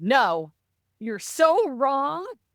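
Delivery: mock disgusted, high and very slow delivery. Retelling what Mom said in reply: imitating disgust. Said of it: "such disgust".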